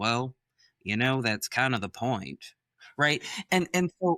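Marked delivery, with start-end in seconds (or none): 0.0-2.4 easy, relaxed Southern Texas drawl. Quoting the reply of the man he was traveling with, Texas drawl. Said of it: "in his Southern Texas, his Texas drawl, he goes".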